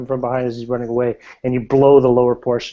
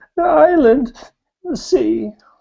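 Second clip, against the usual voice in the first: very high-pitched words broken up by sobbing; 14 semitones higher, 3 dB louder than usual. Narrating a scene, voicing her broken words in between sobs. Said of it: "She's in between sobs".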